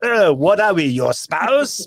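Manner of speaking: slow, put-on French accent, aggrieved tone. Quoting a French official about a cancelled submarine deal: put-on French accent. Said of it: "you have to do that accent".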